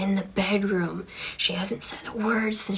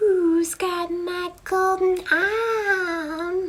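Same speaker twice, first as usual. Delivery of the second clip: put-on very high, loud, funny little old lady voice; 11 semitones higher, 5 dB louder than usual. Retelling a ghost story his father used to tell: funny little old lady voice. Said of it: "that funny little, uh, old lady voice".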